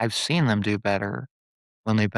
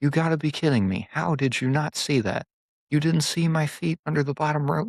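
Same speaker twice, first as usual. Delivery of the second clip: furious, pitched-up angry outburst; 6 semitones higher than usual. Recapping a match, acting out Gunther's reaction to the referee: imitating a furious Gunther. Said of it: "And he's just furious".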